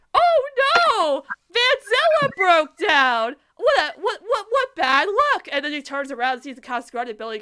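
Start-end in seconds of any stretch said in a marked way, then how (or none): 0.2-5.5 put-on nervous dismay, much higher, louder, slower. Retelling a scene where the car breaks down, Lincoln's put-on nervous dismay. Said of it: "Lincoln looks so nervous when he's saying that Vanzilla broke down".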